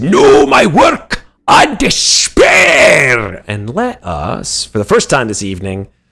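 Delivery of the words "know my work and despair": shrill, very high, dragged-out slow scream. Voicing the dwarf threatening the party before initiative: dwarf screaming. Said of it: "He just screams it".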